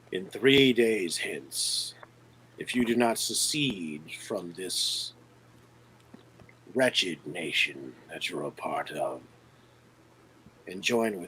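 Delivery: raspy wheezing villain voice. Voicing a villain addressing the group: raspy wheezing villain voice. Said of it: "a raspy, wheezing voice starts echoing".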